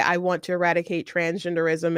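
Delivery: ordinary delivery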